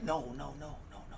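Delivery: hushed, urgent, softly breathed-out voice.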